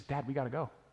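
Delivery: mock urgent, frightened, panicked pleading tone. Retelling a scared daughter's words on a blocked path: imitating a panicked plea. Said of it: "with panic in her voice".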